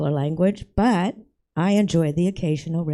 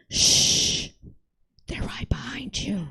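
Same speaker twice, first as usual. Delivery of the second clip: hushed, whispered librarian shush; 4 semitones higher, 5 dB quieter than usual. Telling a joke, voicing the librarian's punchline: whispering librarian. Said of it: "The librarian whispers".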